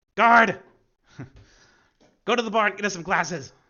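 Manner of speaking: very high, very loud, bellowed booming shout. Voicing a noble who yells to the guard for glasses: yelling as the noble. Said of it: "noble kinda just yells".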